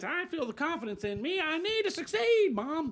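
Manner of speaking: needy voice.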